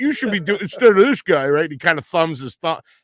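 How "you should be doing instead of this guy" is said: put-on loud heckling voice, higher and louder. Retelling a heckler calling out during the announcements: imitating a loud heckler. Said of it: "some yahoo loudly says".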